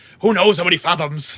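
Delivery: awful, clumsy put-on non-American accent. Mocking how Cable might talk: Cable's awful non-American accent. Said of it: "Cable would have that awful, not American accent".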